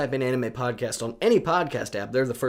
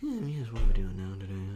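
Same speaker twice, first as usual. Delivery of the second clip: low, mumbled, muttered British accent; 4 semitones lower than usual. Speaker showing how they talk to themselves, muttering in a british accent. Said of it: "mutter to myself in like a British accent".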